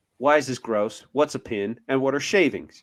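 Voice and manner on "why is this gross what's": plain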